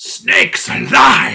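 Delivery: gravelly, proclaiming super-villain voice. Joking how a super villain would cast magic: super villain casting a spell. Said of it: "a super villain, like, doing, like, a, like, a magic".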